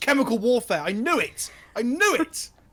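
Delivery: acted, very slow, drawn-out, high shout. Voicing Maxine punching the table in a sudden realization: shouting in character. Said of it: "punches the table with her right and shouts".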